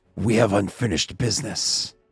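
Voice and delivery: low, primal, growling beast voice. Narrating a game to the players, voicing the figure locked on them: primal growling voice. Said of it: "this like this like uh almost like primal growling voice say".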